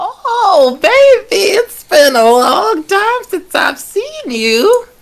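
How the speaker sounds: put-on quavering old lady voice, very high, very loud. Running a Roll20 game, the speaker voices an old lady from the woods: shaky old lady voice. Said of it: "Like she just is a shaky lady".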